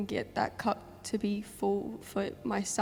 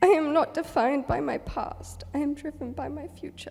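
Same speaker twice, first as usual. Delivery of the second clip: emotional, pitched-up, raised voice; 6 semitones higher, 6 dB louder than usual. Reading out the title of the journal they chose, getting a bit emotional. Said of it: "I'm getting a bit emotional".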